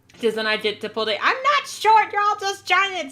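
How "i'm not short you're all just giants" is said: tiny, squeaky, very high little voice. Short speaker answering tall people who tease them, little munchkin voice. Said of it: "with a little munchkin voice".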